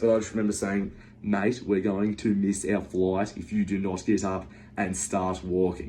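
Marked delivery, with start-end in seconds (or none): 1.3-5.9 calm soothing tone. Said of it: "or was it my soothing voice?".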